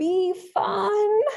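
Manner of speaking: put-on really unsure, very high, doubtful child's voice. Recalling what the speaker's son used to say when unsure, imitating his unsure sound. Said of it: "with this really unsure sound in his".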